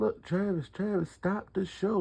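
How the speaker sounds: high, urgent, pressing voice. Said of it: "They like".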